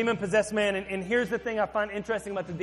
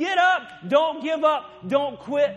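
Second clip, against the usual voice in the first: put-on loud, drawn-out yells of encouragement; 6 semitones higher, 6 dB louder than usual. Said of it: "I love hearing people scream encouragement".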